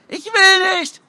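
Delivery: very high-pitched, frightened scream. Being dragged off a chair by the collar, the narrator screams. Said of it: "Ich schrie".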